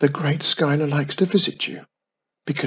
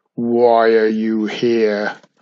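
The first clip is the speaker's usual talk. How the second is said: deep, booming, slow, drawn-out voice; 4 semitones lower, 6 dB louder than usual. A voice calls out from the far end of the hall: deep booming voice. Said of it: "A deep booming voice called out".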